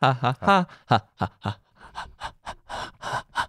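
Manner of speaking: slow, creepy, dog-like panting ha's. Warming up before recording, creepy dog-like panting. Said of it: "You sound like a creepy dog".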